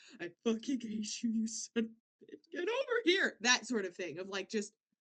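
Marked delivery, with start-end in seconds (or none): 0.2-3.4 play-acted furious crying, angry sobbing through tears. Imagining someone reunited with a person who left them, mock angry crying. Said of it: "it's just this crying".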